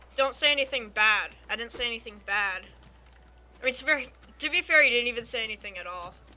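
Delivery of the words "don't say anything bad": plain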